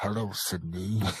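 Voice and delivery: deep, very soft, hushed, under-the-breath voice. Asked whether they've practiced doing a voice, answering in a Ghostface voice. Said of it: "he is the voice of Go, uh, Ghostface".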